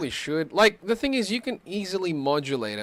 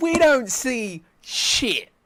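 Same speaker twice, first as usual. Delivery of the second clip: high, loud, slowed mock protest. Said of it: "and I'm like".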